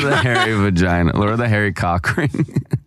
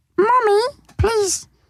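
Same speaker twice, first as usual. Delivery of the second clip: very high, squeaky, helium-balloon voice. Doing a voice while others react and guess who it is, squeaky helium voice.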